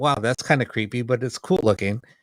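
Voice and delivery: ordinary talk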